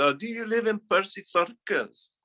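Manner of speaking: put-on Russian accent, high-pitched. Asked to do the accent, retelling what a woman at swimming lessons said; imitating a woman's accent. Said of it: "Can you do the accent?".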